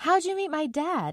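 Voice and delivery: forced, very high, put-on cheerfulness. The narrator asks a woman a question after she admits feeling uneasy, with forced cheerfulness. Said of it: "I asked as cheerfully as I could".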